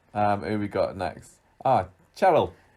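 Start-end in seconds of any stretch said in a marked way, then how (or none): 1.7-2.5 put-on Scouse accent, higher and louder. Naming the next character, imitating how Lloyd says it: Scouse accent as Lloyd. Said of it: "I can only say Cheryl in a, in a Scouse accent".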